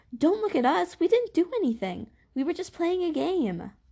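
shrill, very high-pitched, swooping defensive tone. One of the Bellas answers Augustus asking what's wrong; defensive. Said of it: "One of the Bellas said defensively".

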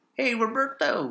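high, slow hillbilly drawl. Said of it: "I'm doing, like, the hillbilly".

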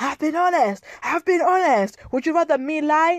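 screamed line, high pitch. Retelling how he reacted when she raised the subject: imitating him screaming. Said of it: "he starts screaming".

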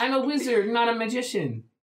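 shrill, very high-pitched voice. Imitating a character's mother who says she's a wizard: imitating Mum. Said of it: "That's how she sounds".

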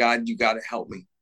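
ordinary talk, nothing marked

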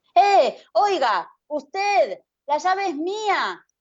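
high, very slow, drawn-out shout. The narrator yells at a woman who has spotted his key: shouting. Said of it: "Le grité".

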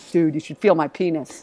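low, dropped, put-on deep voice. Retelling what a son suddenly said at bedtime: imitating a deep voice. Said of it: "that deep voice".

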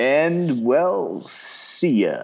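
deep on-air radio announcer voice. Signing off after someone wishes the hosts well: radio voice. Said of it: "I'm going to use my radio voice for this one".

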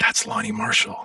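very high, hushed whisper under the breath. Recalling a woman whispering to the bass player, retelling a whisper under breath. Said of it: "whispering under her breath to Tony".

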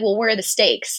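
plain

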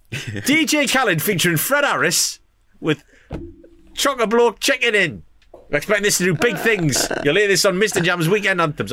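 very high, bad radio DJ voice. Imagining a track played on Radio 1, bad Emil impression. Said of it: "That's a really bad impression of Emil".

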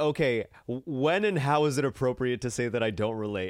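plain

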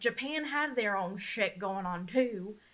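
Southern-sounding delivery. Discussing the rise of Mussolini, Stalin and Hitler, sounding southern. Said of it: "That sounded southern".

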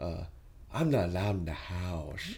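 low quiet monster voice. Describing a movie character's voice, then doing it: Horror from Pagemaster voice. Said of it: "His voice sounds like Horror from Pagemaster".

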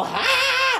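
high hollered ha in preacher style. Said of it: "and you go".

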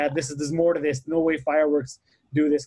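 ordinary talk

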